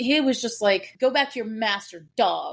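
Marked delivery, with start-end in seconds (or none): 1.0-2.5 put-on nasty pissed-off voice. Retelling how a character sounded when he snapped: imitating Eris sounding pissed. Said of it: "He was pissed".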